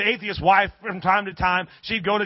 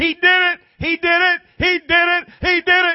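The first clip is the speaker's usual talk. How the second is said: very high, drawn-out whooping, hollering scream; 10 semitones higher, 7 dB louder than usual. Retelling her finding groceries left on her porch: imitating her screaming. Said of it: "she's screaming".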